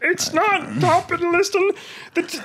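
very high, slow, squeaky mock lecturing parody voice. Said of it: "parody of Jordan Peterson where I had a squeaky voice".

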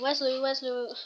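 ordinary talk

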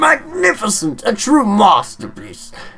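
high, slow, droning character voice. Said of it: "I don't know why he sounds like that".

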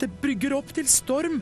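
gasped out, very high pitched. Reading a story, a character caught by a strong gust of wind, gasping. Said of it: "gispet han".

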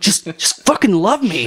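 high, drawn-out goofy comic delivery. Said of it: "you didn't say it like Will Ferrell".

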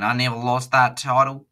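put-on Southern US drawl. Retelling a wrestler's interview line: imitating a Deep South accent. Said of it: "with a Deep South saying".

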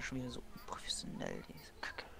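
muttered under breath, whispered.

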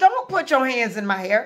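ordinary talk, nothing marked

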